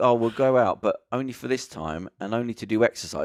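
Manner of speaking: ordinary talk, nothing marked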